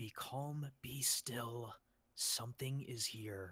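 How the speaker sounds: hushed, soft, careful half-whisper. A character creeping toward a rustling sound, half-whispering. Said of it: "I'm just gonna whisper".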